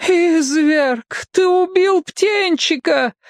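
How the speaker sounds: moaned words. Narrating a story, reading a character's line after an egg is smashed: moaning. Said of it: "простонал Бамбала".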